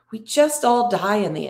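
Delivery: ordinary talk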